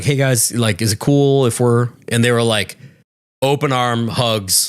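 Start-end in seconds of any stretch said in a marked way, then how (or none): none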